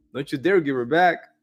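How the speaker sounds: playfully stern, teasing tone, quick. Speaker repeats what his wife's father told him, quoting a joking remark. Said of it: "kind of jokingly".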